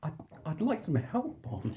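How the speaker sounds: voice breaking and cracking, close to tears. Acting out M asking Bond for help after a tear: voice cracking. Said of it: "Voice cracks".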